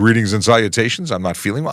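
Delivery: normal talking voice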